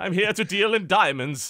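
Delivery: Norwegian businessman character voice. Improvising a Norwegian businessman character with friends: Mans Pocky voice. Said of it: "Norwegian businessman".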